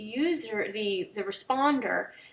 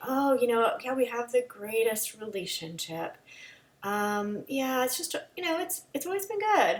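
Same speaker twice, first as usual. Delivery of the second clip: exaggerated, acted hesitation, swooping, dropping tone. Imitating an interviewee describing a relationship with their son: exaggerated put-on hesitancy. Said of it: "you're hearing the hesitancy that I exaggerated in my voice there, and the drop in tone".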